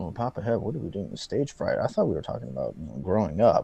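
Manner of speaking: soft, hushed half-whisper under the breath. Mocking a commenter who talked too softly into the microphone: imitating someone half-whispering. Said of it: "It's like he was whispering into the microphone".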